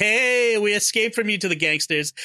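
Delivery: cocky, smug, self-satisfied, pleased-with-himself tone. Describing a film scene where the heroes board a plane, retelling Indy being smug. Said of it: "all smug like".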